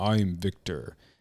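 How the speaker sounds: put-on deep voice with South American accent. Retelling how the shaman introduced himself: imitating Victor's deep voice.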